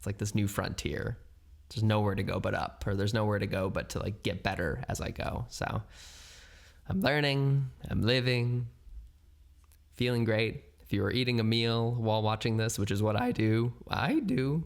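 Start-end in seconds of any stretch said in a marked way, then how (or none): 13.9-14.6 voice breaking and cracking up high. Speaker signing off to listeners, voice cracking mid-sentence. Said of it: "nice voice crack".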